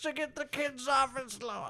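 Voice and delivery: silly, goofy, cartoonish voice, very high. Talking about an expensive headset, slipping into a Cosby impression. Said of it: "I keep doing that voice".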